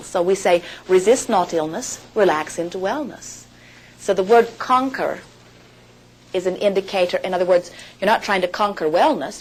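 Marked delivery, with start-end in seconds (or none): none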